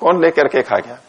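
normal talking voice

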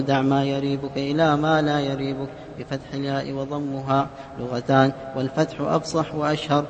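soft, faint, off-mic voice.

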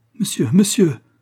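high, begging, pleading cry. Reading a novel, a sick woman addresses the bailiff dictating an inventory, crying out, begging. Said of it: "s'écria la malade".

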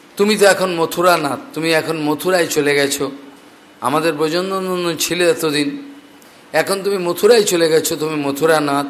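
ordinary talk

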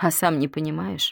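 ordinary delivery, nothing marked

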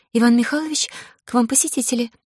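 frightened, high, cracking, faltering babbling stammer. A frightened girl announces visitors over the internal phone, voice breaking. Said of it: "срывающимся голосом пролепетала".

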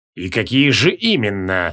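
low, slow hiss, patience running out. Kreol answers the king, who demands stronger proof, hissing impatiently. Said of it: "прошипел Креол".

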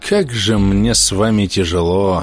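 tired, weary, exhausted mumble. The narrator mutters to his companions, a tired mutter. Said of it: "устало пробормотал я".

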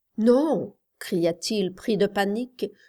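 ordinary delivery, nothing marked

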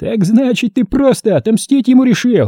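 very high, mocking, scoffing, taunting voice. One character answers another's claim, with a mocking snort. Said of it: "насмешливо фыркнул Хорт".

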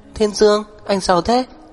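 high-pitched, out of breath, panting hard. Huyền Tinh, barely standing, speaks to Thiên Dương, panting and out of breath. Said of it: "thở hồng hộc nói".

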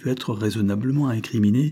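plain reading voice

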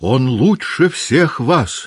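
high, abrupt, sudden outcry. Rising up, she defends the man just called a scoundrel: crying out. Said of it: "вскрикнула Наташа".

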